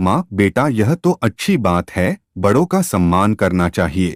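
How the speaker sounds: normal talking voice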